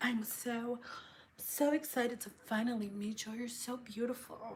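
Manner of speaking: very hushed, soft, sultry, sensual voice. Retelling a client's greeting: imitating a sensual client. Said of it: "she was really sensual, like".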